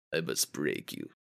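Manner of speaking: deep, hushed, very quiet, menacing low murmur. Quoting the villain Drago right after he is called menacing: menacing Drago voice. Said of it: "He's very menacing".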